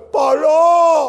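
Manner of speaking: loud, high-pitched call carried out at a distance.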